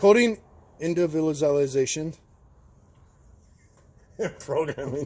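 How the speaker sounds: words breaking up with laughter. Walking through software steps after fumbling a word: laughing while talking. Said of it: "Sorry, I'm laughing".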